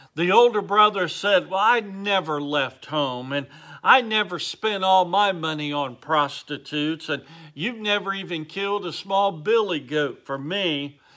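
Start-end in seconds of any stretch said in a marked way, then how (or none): none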